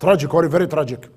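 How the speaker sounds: put-on thick Irish accent, heavy brogue. Retelling a man's words about the accident, thick Irish accent. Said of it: "in this thick Irish accent".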